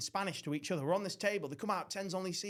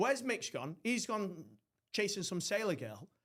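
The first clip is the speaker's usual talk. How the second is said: ordinary delivery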